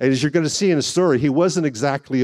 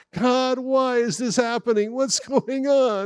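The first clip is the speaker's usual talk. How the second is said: high, whiny complaining tone; 10 semitones higher, 4 dB quieter than usual. A speaker demonstrating the why questions people ask, mock whining. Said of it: "you hear the whine in my voice?".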